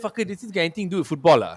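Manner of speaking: irritated, dismissive, angry-sounding retort. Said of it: "why are you getting angry?".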